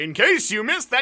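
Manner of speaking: loud booming delivery. Retelling how they came on loud after a whispering co-host: stentorian delivery. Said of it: "I come on with the stentorian delivery like".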